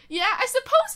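high, loud, casual and cocky tone.

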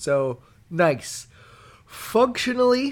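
slow delivery, spoken through a yawn. Discussing a book's narration with a co-host, talking through a yawn. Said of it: "I'm yawning while I'm talking".

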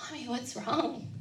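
imitated worried tone. Retelling her child's question to her as she burst into tears, imitating his concerned voice. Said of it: "in his most concerned voice".

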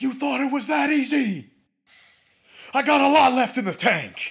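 shrill, raging, taunting scream, very high and loud. Retelling a man screaming over his downed opponent, retelling furious screaming. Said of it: "and he's screaming".

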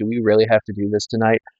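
ordinary delivery

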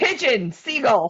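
commanding, confident, authoritative delivery. Reading a strange note aloud after being asked: with authority. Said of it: "Just say it like you, like, like, with authority".

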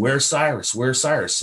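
mild, half-yelled, repeated calling out. Recounting chasing after a family during a boar hunt, retelling a yell. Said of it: "he was yelling".

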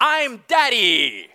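put-on triumphant small-child voice. A father tells of his daughter wearing his clothes, retelling her triumphant voice. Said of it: "with a triumphant voice say".

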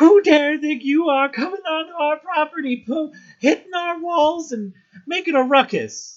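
put-on very high, loud, berating old woman voice. Voicing an old woman who jabs a dagger at a visitor: berating old woman voice. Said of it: "sort of just starts to old woman berate you".

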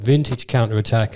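plain

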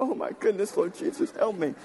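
weeping through the words, tearful. A pastor pausing mid-sermon to the church, crying. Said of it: "I don't know why I'm crying".

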